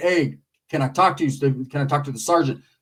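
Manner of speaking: very soft-spoken, low-key voice. Retelling a story, quoting the Uso: imitating a soft-spoken man. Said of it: "very soft-spoken".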